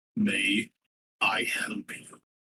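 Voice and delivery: soft-spoken giant voice. Narrator voicing a giant of a man who approaches the listener, giant character voice. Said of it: "a giant of a man comes up to you".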